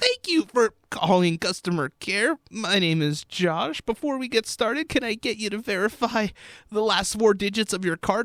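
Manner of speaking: wrecked, sore, hurting voice, pitched high, sounding horrid. Speaker acts out their own customer care call greeting; imitating own horrid, hurting voice. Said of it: "my voice goes like this".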